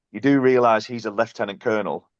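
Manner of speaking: normal talking voice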